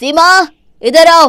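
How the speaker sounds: very loud, high, furious angry shout. A son calls a woman over about his mother, shouting angrily. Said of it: "क्यों चिल्ला रहे हो?".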